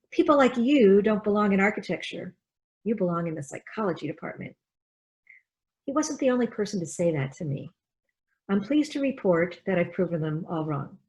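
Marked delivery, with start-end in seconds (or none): none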